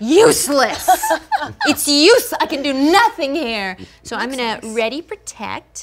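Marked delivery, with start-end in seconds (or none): 0.0-3.8 loud, high-pitched yelling. During a game stream, the speaker is yelling into the microphone. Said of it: "Sorry for yelling into the microphone".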